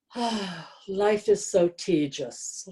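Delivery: mock, grandly dramatic, very theatrical delivery. Recalling an author who signed her book, quoting her in a very dramatic voice. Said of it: "in her very dramatic voice".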